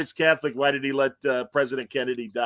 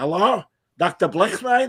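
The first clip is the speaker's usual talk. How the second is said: put-on higher-pitched old man voice; 5 semitones higher, 4 dB louder than usual.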